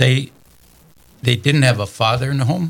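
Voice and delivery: choked-up, tearful voice, right on edge of tears. Speaker recalls older men weeping over absent fathers, near tears. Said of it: "and I'm going to cry too".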